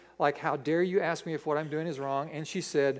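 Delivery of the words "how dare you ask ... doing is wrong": ordinary delivery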